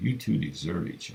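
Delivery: ordinary delivery, nothing marked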